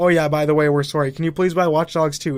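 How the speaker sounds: ordinary talk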